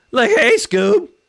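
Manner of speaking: very loud, very high, goofy cartoon slacker voice. After a comment says you sounded like Shaggy, try to do it better, in a Shaggy voice. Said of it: "I can do Shaggy better than that".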